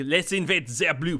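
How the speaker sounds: muddled blend of French, Brooklyn and German accents. Playing with accents while filming a video: French-Brooklyn-German accent mix. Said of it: "kind of a mix of like French and Brooklyn and German".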